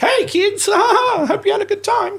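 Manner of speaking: high cartoon clown voice. Retelling how he greets kids after his clown show, Mickey Mouse-like clown voice. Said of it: "it sounded like Mickey Mouse".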